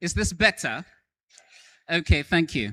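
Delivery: loud, carrying, projecting classroom teacher voice. Addressing an audience who can barely hear, switching to teacher voice. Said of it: "I'll have to borrow my teacher voice".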